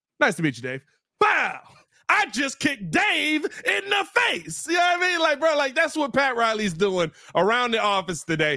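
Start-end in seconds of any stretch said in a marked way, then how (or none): 0.2-4.7 high, slow, swooping, stretched sing-song delivery. Retelling a wrestling moment, imitating Shawn Michaels. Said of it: "He's like".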